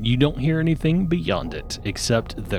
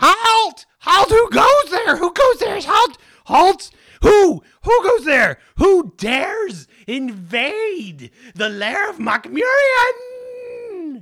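very high, squeaky, squealy squeal; 6 dB louder than usual. Game master voices someone behind a stone door in a high-pitched, squealy voice. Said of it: "in a high-pitched, squealy voice".

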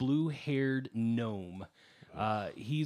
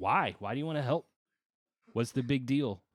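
curt, snippy, snarky, sarcastic tone. Voicing a gnome character who questions why the paladin wants to help: snippy and snarky. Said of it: "he's a little snippy and snarky".

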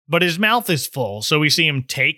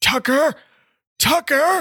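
put-on whispery voice, much higher pitch; 10 semitones higher than usual. Retelling a scene where Harry calls out for his vanished friend, in Harry's whispery voice. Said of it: "he's got the whispery voice".

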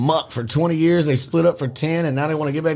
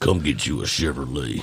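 very deep, low, soft car-commercial pitchman voice; 5 dB quieter than usual. Doing a bit in a put-on voice, Chevrolet voice. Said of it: "my Chevrolet voice".

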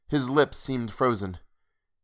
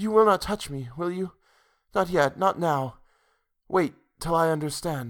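whispered, higher and slower; 5 semitones higher than usual. Rosamond speaks to a man holding out his arm toward her, whispered. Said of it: "she whispered".

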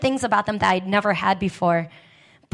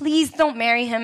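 mock begging, pleading tone; 3 semitones higher than usual. Retelling what her mother begged her, imitating mom begging. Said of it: "But she begs me".

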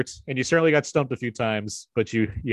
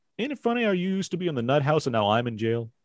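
plain

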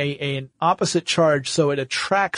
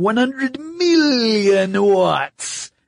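high-pitched, menacing evil villain voice; 7 semitones higher, 3 dB louder than usual. Told they sound like Dr. Evil, speaker repeats the figure: Dr. Evil impression. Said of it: "You sound like Dr. Evil".

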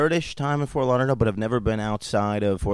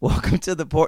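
high voice, laughing through the words; 7 semitones higher, 4 dB louder than usual. Restarting the podcast intro again, laughing while talking. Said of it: "laughing's fine".

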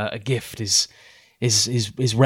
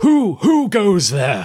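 loud, booming, high-pitched cry; 9 semitones higher, 6 dB louder than usual. An unseen voice calls out to the travelling salespeople: booming voice crying out. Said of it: "A booming voice kind of cries out".

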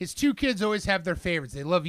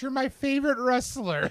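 put-on high, tearful, crying, pleading young girl's voice; 7 semitones higher than usual. Retelling what a crying girl said to a wrestler: imitating a crying girl. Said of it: "she's hugging Johnny's leg crying".

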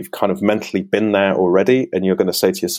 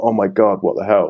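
mock panicked outburst. Voicing an athlete imagining a flat tire: imitating someone freaking out. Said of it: "I'd be freaking out a bit, going".

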